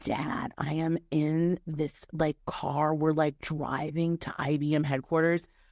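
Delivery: put-on whispered voice. Retelling a phone call to dad from a hired car: imitating own whisper. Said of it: "whispering as if the driver can't hear me".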